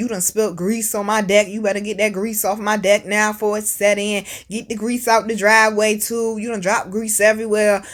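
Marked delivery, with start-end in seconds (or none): none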